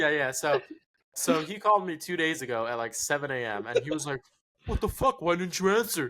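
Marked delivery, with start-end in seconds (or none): 4.7-6.1 irritated, demanding, pissed-off outburst, pitched up. Retelling how he called at seven a.m., imitating someone pissed off. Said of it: "He was all pissed off".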